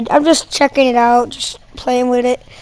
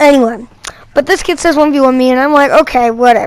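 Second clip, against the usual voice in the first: ordinary delivery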